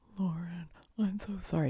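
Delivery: fake drunken slurred speech. Retelling Dave apologizing to Lauren while drunk, imitating Dave's drunk slur. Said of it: "He's completely drunk and slurring his words".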